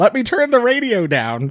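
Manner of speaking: loud swooping call-out. Retelling an old lady's line from a movie: imitating someone speaking loudly. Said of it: "she loudly says".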